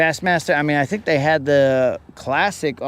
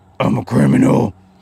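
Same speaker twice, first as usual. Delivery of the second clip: hard-edged, aggressive, loud, raised superhero voice; 3 semitones lower, 5 dB louder than usual. Comparing two Batman voices, first the aggressive one: Unlimited Batman voice. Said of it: "Unlimited sounds like this".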